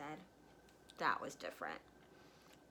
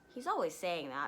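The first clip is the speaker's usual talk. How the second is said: plain reading voice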